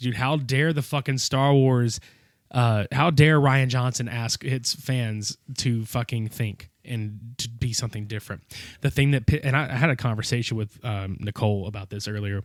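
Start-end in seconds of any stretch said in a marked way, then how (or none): none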